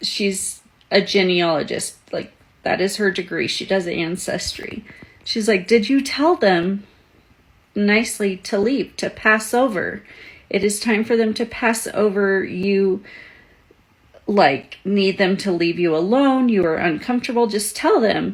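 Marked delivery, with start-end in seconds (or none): none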